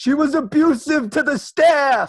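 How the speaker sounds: put-on frustrated outburst. Retelling what he said about his sister, imitating a frustrated outburst. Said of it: "he gets so frustrated. He goes".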